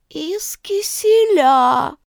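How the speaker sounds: sleepy, drowsy voice. Someone behind the cook chimes in with an answer, in a sleepy voice. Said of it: "проговорил у нее за спиной сонный голос".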